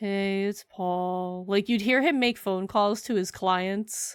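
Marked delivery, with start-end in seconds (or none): 0.0-1.4 acted lifeless, flat, depressed monotone, male-sounding. Retelling how Paul would greet people: imitating Paul's depressed delivery. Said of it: "he would say it like that".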